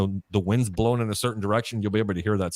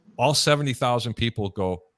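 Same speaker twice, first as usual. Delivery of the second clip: normal talking voice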